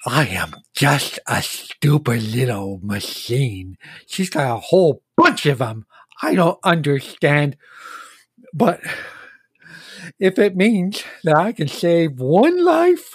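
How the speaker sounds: lisping character voice, s sounds slushed sideways. Game master voices the living ballista creature speaking to the players: lateral lisp. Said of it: "So, I do have a bit of a speech impediment, sure. It's called a lateral lisp. / he looks like a living ballista. On his back is a very large looking, almost sort of harpoon launcher. / And he takes a".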